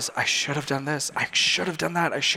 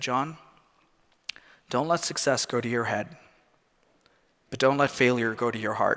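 acted-out whisper; 2 semitones lower than usual. Retelling a phrase he felt was whispered into his heart: imitating a whisper. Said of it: "he just whispered to me".

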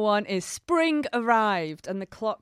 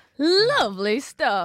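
sarcastic, pitched-up fake approval; 5 semitones higher, 3 dB louder than usual. Reacting to ferry staff being sacked over Zoom: sarcastic remark. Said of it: "You've been sarcastic".

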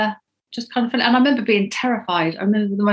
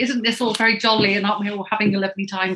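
ordinary delivery

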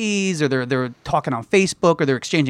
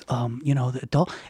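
put-on sheepish, timid voice, quieter; 3 semitones lower, 6 dB quieter than usual. Retelling how a customer asked about stock: imitating a sheepish customer. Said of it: "come in very sheepishly".

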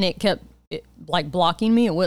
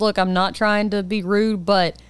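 plain

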